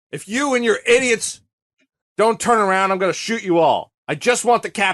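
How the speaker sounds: acted, high-pitched screaming. Recounting Benny approaching the shoreline to face the captain, retelling Benny's scream.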